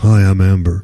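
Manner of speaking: very deep, very low voice. Describing the Sims character someone designed, Amber's deep voice. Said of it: "It gave her a deep voice like this".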